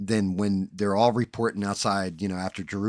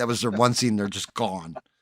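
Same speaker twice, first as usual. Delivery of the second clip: plain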